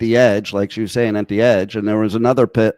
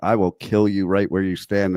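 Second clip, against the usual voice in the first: mock steady, unflinching tone, lower and quieter; 2 semitones lower, 5 dB quieter than usual. Telling how he faces a much bigger man, the speaker acts out an unflinching threat. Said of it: "look him straight in the eye without flinching".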